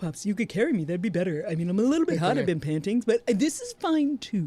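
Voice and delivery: sugary, sweet on top, passive-aggressive voice. Speaker acts out what she used to say to him; mock sweetly passive-aggressive. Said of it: "very sweetly passive aggressive".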